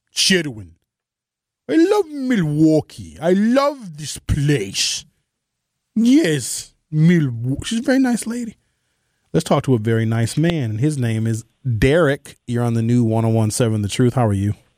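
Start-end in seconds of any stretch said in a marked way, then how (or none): 0.2-7.7 put-on Ukrainian woman's accent, slower. A radio host mimics a Ukrainian woman he once knew: imitating a Ukrainian woman's accent. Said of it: "She talked like this".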